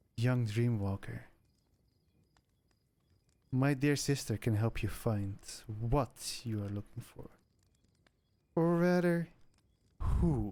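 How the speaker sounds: deep, heavy feminine character voice. Storyteller voices a character speaking to a young dreamwalker, deep, heavy feminine voice. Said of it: "feminine, but very deep and heavy still".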